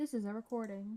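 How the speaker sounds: mechanical robotic voice, like a recording. Announcing that the session is being recorded: robotic, like a recording. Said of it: "Haley sounded like a recording".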